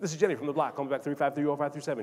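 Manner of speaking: talking as fast as possible, rattled off. Retelling a voicemail message Jennifer left, talking as fast as possible. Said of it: "She would talk as fast as she could".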